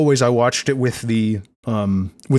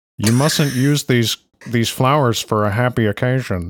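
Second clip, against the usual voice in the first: put-on bored, emotionless voice. Quoting a line after praising the Yosho voice: bored emotionless Yosho voice. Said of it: "Matt Miller's Yosho voice".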